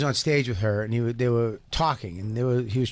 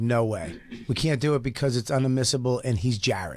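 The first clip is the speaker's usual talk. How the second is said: ordinary talk, nothing marked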